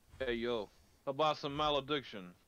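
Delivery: turn-of-the-century East Coast accent. Trying out accents on a word, speaker landing a turn-of-the-century East Coast accent. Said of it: "turn of the century, like East Coasty accent".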